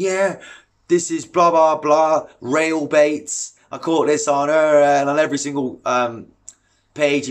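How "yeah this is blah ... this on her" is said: smug, cringeworthy, show-off bragging tone. Mimicking a local mate who boasts about his bait sponsor: mocking a cringy angler. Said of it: "it's cringy, guys".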